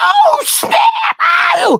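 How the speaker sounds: very high, thrilled, excited shout. Retelling how the audience reacted to the punchline: imitating excited audience shouts. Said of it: "you hear, like".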